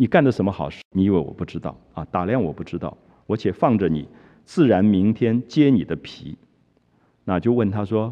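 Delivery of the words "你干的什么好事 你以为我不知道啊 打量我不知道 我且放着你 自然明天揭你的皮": ordinary talk, nothing marked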